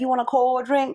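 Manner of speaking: put-on New Orleans accent. Imitating how New Orleans people talk: imitating a New Orleans accent. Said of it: "And they be like".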